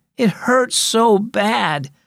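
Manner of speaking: very slow, high, drawn-out moan of pain. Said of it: "moaned Adeline".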